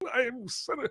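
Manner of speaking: very high, squeaky, fake British accent. Imitating a film senator's line: fake British accent. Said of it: "he had the fake, you know, British accent".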